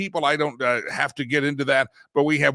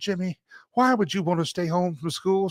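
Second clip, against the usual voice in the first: put-on high-pitched Southern accent of a woman; 5 semitones higher than usual. Retelling his mother's question about staying home: imitating Mama, Southern woman accent. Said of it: "She talked like a Southern woman".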